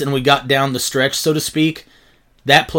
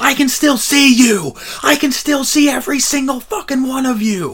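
very high, shrill, stretched-out, drawn-out screaming; 11 semitones higher than usual. Recalling standing on the turnbuckle in front of the crowd, re-enacting screaming. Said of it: "just started screaming".

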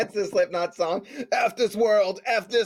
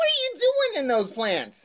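Jersey-sounding accent; 9 semitones higher than usual. Speaker calls to someone in the plants, in a new jersey accent. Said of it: "I just sounded like I was someone from Jersey".

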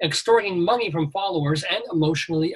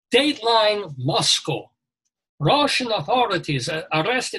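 put-on Russian accent; 3 semitones higher than usual. Showing he can now do something Russian, reading a news line: Russian accent, like Bela Lugosi. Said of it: "Now I sound like Bela Lugosi".

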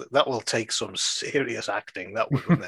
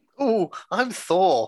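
high, hurting voice with lisp; 8 semitones higher than usual. Joining a joke about a lisping Thor always in pain: mock pained voice with lisp. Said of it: "but he's got a lisp".

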